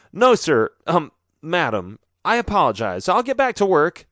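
stammering. Nathan, caught out by the teacher in class, answers stammering. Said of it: "Nathan stammered".

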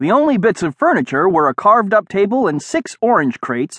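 ordinary delivery

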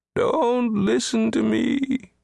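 very high, creaky, rough wailing cry. An unseen voice calls out near the sleeping rooster: crying out. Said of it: "he cried out".

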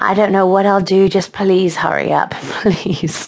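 words spoken as a moan. Narrator reads her reply to Chase, moaning. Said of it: "she moaned".

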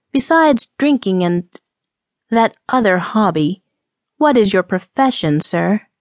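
ordinary delivery, nothing marked

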